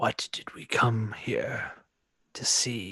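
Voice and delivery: slow, drawn-out, layered voice like scraping, grinding timber. Speaking as Bazakor, close to the mic, a voice like scraping wood. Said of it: "close to the mic to speak as Bazakor".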